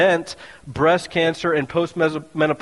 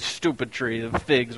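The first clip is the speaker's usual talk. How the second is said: put-on New York accent, irritated and cranky; 6 semitones lower, 6 dB quieter than usual. Imagining a hangry Jesus kicking a fig tree, in a put-on New York accent. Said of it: "This is my best New York accent".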